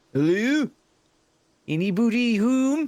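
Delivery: put-on Scottish accent. Knocking on a door in a game, calling out: Scottish accent. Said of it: "my Scottish accent isn't out".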